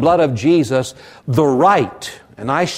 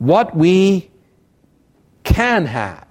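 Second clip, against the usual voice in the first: main emphasis on the word can; 3 semitones higher than usual. Speaking about drawing very close to the Lord: stress on can. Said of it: "I am stressing the word can".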